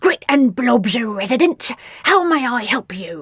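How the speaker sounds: growling, growly monster voice. Grit answers a phone call from Nellie in a deep growly voice. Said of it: "a deep growly voice answered the phone".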